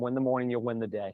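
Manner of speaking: usual speaking voice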